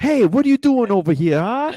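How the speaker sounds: put-on very high, very loud, shrill New Jersey accent. Imagining how jersey corn would talk, put-on new jersey accent. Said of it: "They all talk like".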